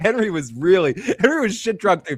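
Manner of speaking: ordinary talk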